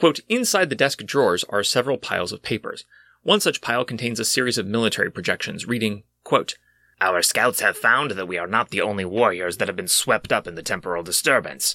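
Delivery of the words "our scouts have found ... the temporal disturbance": slightly altered reptilian lizard creature voice. Game master reads a military report to the players: lizard person Captain Janeway voice. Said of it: "Here I am doing my lizard person voice".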